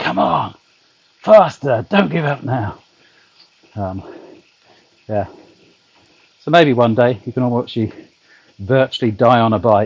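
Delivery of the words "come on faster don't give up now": encouraging coach-style shout. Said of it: "a trainer shouting at you".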